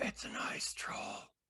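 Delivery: slow, hushed whisper, barely audible. A player whispers back to the party about an ice troll, whispering. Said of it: "I'll just whisper back".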